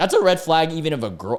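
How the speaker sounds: voice cracking, jumping high mid-sentence. Giving personal advice: voice cracking. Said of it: "my voice just cracked".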